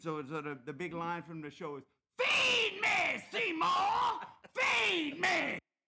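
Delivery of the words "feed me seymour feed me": very high, very slow, drawn-out monster scream. An actor demonstrates the big line from the show in evil man-eating plant voice. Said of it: "Give us a little example".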